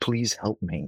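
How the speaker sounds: quiet, hushed, secretive, pleading half-whisper. Retelling how people at companies contact them for help: imitating a half-whisper. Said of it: "with this whisper in their voice to say".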